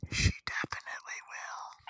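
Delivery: hushed, whispered theatrical stage whisper. In a role-play scene, adding a remark on the side, stage whisper. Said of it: "Stage whisper".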